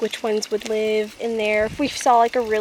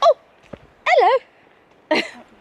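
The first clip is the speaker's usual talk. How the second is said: put-on British accent, very high and loud; 7 dB louder than usual. Showing what a hobbit would do, the speaker gives a greeting in a British-accented hobbit voice. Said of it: "Not with a British accent".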